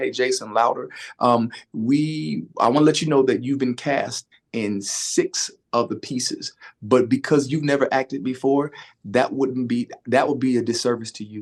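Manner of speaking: ordinary talk, nothing marked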